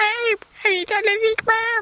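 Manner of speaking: high-pitched helium voice. Describing big sailors talking with helium, in a very high helium voice. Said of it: "that very high helium voice".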